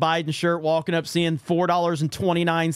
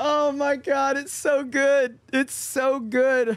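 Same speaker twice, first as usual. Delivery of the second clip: high, drawn-out laughing to tears through the words; 8 semitones higher than usual. Reacting to an ad on stream, crying laughing. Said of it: "I'm crying laughing".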